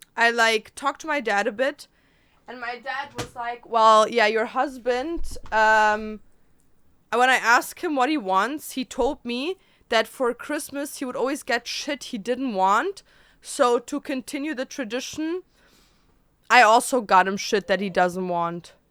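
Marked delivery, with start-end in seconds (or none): none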